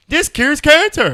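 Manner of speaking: mock obnoxious voice, very high, slow, stretched squeal.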